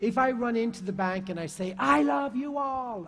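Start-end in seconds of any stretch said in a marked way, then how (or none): 1.8-3.1 raised, high, drawn-out yelling. Showing how a raised voice lands on people in a bank, shouting. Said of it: "and I'm shouting at them".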